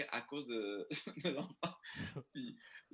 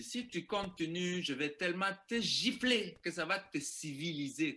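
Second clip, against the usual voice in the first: high, angry scolding mother voice; 5 semitones higher, 4 dB louder than usual. Speaker recounting what a mother told her child who kept yelling, imitating a mother scolding. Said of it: "elle a engueulé".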